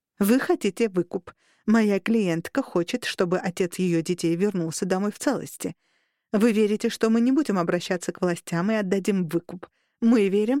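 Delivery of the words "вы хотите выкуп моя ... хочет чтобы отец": usual speaking voice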